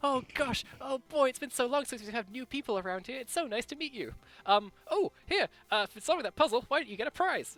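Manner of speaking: very excited, thrilled, eager, gushing. Narrator voicing Seth as he shakes a player's hand, very excited greeting. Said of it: "shakes your hand very excitedly".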